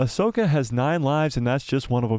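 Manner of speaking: plain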